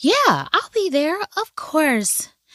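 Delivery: play-acted, very high, sing-song, sweet innocent voice. Retelling what she said in reply, trying to sound innocent, mock-innocent voice. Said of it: "let me try to get innocent".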